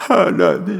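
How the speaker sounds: put-on high, loud, wailing child's sob.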